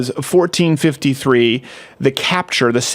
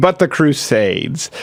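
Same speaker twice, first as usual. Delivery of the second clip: normal talking voice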